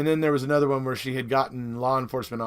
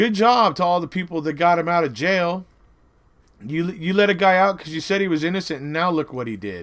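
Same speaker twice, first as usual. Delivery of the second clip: mocking, sarcastic, raised, pitched-up tone; 5 semitones higher, 5 dB louder than usual. Quoting what a woman then went on to say, retelling a sarcastic remark.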